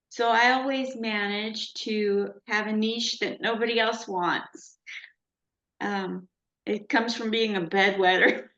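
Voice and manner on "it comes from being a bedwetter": laughing through the words, rushed. Laughing at their own joke mid-sentence, laughing while talking. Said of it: "I laughing at my own joke".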